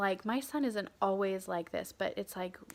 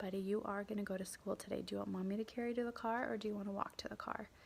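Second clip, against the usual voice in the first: calm, lowered voice, quieter than surrounding speech; 7 dB quieter than usual. Mother reenacting what she told her mad son, retelling in a lowered voice. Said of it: "I'm lowering my voice and I'm saying".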